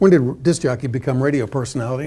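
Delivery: ordinary delivery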